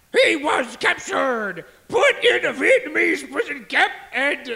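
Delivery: furious, angry military man's voice. Asked to tell the story with an accent, continuing it in angry Marine accent. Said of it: "that was my angry Marine accent".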